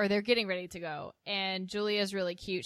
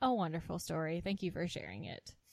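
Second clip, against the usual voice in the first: mock-deadpan put-on voice, quieter; 3 semitones lower, 5 dB quieter than usual. Retelling a group story, quoting Julia's reply, imitating Julia's deadpan voice. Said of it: "in her classic deadpan voice says".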